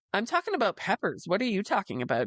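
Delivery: straight-faced, innocent-sounding, with swooping pitch. Retelling a reply to farmers market customers: mock deadpan. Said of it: "with a straight face, poker face".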